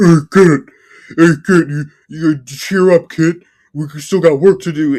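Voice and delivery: odd, weird little dinosaur voice, loud. Recounting a show where a dinosaur cheers up the main girl: weird little dinosaur voice. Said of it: "the little dinosaur guy with the weird voice".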